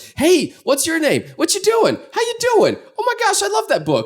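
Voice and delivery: mock excited voice. Retelling how someone comes up to make friends: imitating someone super excited. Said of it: "super excited to, like, make friends".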